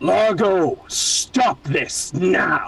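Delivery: high, very slow, drawn-out dragon voice. Voicing a character calling out to a dragon: draconic voice. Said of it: "your draconic voice".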